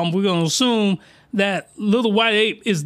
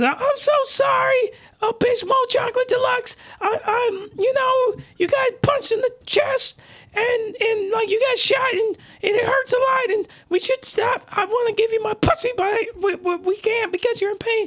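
very high, pitched way up put-on female voice. Telling a story and voicing the woman's lines, in a put-on female voice. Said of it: "I'm gonna do my my female voice".

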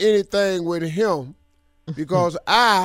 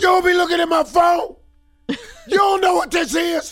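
put-on, shrill yell pitched way up; 12 semitones higher than usual. Acting out getting on offense when she finds something in the phone: acted yelling. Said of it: "Why are you yelling?".

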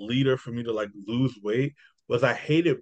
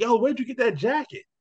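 acted-out, very high, shrill shouted yell; 12 semitones higher than usual. Retelling a driver who braked right behind them on the street, retelling a yell. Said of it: "he yells like".

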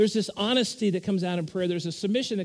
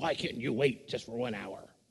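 mock anger, very low and hushed; 7 semitones lower, 7 dB quieter than usual. Describing a dramatic tape version where Jesus returns to sleepers, retelling Jesus's angry voice. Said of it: "it's almost like he has this angry voice".

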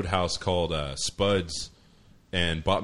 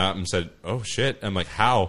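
plain

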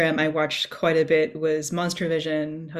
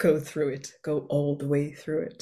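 clumsy, poorly done put-on English accent; 3 dB quieter than usual. Praising Oliver Reed as an intense pseudo psychiatrist, imitate him in a very poor Oliver Reed accent. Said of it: "With my very poor accent there".

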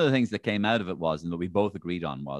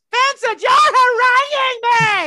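shrill, very loud, high full-blast shriek; 13 dB louder than usual. Imitating a politician losing the plot on a television show: Joan Burton shrieking voice. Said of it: "everybody remembered the shrieking voice".

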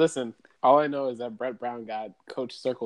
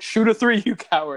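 very high, loud, heckling yell; 10 semitones higher, 6 dB louder than usual. Retelling what was yelled at the tv during the series: retelling own yell at the tv. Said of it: "I was real life yelling".

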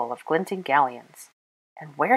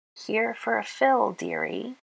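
dry, husky croaking voice, pitched high; 6 semitones higher, 4 dB quieter than usual. A narrator reads the keeper's greeting to Granger, in a husky, dry croak. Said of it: "croaked the keeper to Granger. The husky, dry voice".

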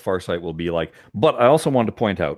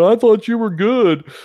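high, loud, mocking taunting tone. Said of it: "They're gonna be mocking me, going".

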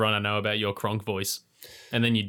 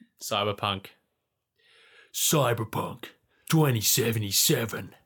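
put-on flat, level actor voice. Saying the game's name, going for a Keanu Reeves voice. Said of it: "I was going for, um, Keanu".

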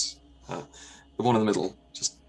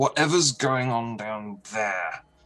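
sudden, very different, slow, high wizard voice; 5 semitones higher, 4 dB louder than usual. The character on the right speaks up, in a very different accent. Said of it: "in a very different accent".

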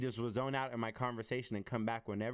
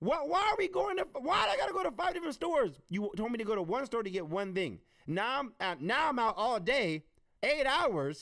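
high, loud exasperated rant. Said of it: "I'm just like".

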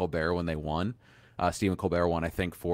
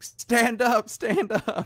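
mock, very slow, very high, drawn-out yell; 6 dB louder than usual. Retelling how Conan stood at the awards show: imitating Conan yelling. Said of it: "yelling at everyone to".

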